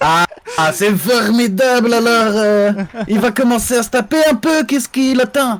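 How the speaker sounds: put-on Belgian French accent. Commentator watching a fighter in the ring, in a Belgian accent. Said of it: "Tout le monde prend l'accent belge".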